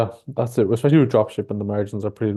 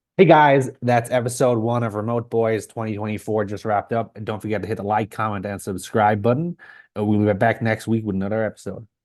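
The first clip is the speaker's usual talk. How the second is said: put-on American accent. Redoing the episode sign-off with more energy: American voice imitating Sammy. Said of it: "my American voice? Sounding like Sammy".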